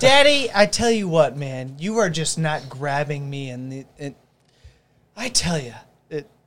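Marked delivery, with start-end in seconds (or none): 0.0-3.5 put-on very loud little-kid voice, like a four-year-old. Retelling what a four-year-old son tells his dad: imitating his four-year-old son. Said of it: "hearing an opinion from a four-year-old".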